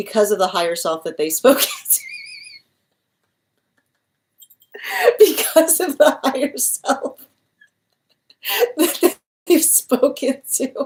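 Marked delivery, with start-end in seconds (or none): 1.2-10.9 talking through helpless laughter, pitched up. Giving a reading to a viewer and struggling to explain it, laughing while talking. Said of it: "I'm sorry I'm laughing so hard".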